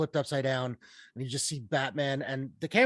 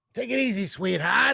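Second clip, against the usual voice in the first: put-on old New York accent, pitched up higher; 7 semitones higher than usual. Praising an actor's unrecognizable role, quoting him in Colin Farrell's New York accent. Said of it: "James Cagney kind of like New York".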